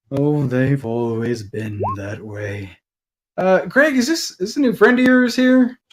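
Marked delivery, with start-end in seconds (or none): 0.1-2.7 flat, soft, dull, low sighing tone. In an acted scene, answering an energetic voice: soft, dull sighing. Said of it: "the soft and dull sighing".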